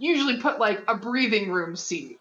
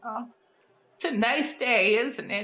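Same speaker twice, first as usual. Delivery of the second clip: put-on stock old lady voice, slow and drawn out; 4 semitones higher than usual. Storyteller voices an old woman making awkward conversation, generic old woman voice. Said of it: "My generic old woman voice".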